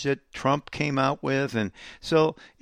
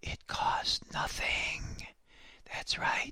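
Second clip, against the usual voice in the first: very quiet, hushed, breathy whisper. Retelling how the president spoke into the camera: imitating a whisper. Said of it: "he said in his best whispering voice".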